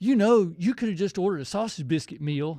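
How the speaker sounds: genuinely mean, nasty tone. Retelling what the lady handing out food said: imitating someone saying it mean. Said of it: "real mean".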